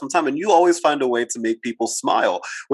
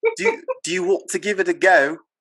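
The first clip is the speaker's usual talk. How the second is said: bad, pitched-up, sing-song British accent; 5 semitones higher than usual. Asked to give it a go, the speaker tries a British accent. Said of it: "I have sometimes tried to do um, a a British accent".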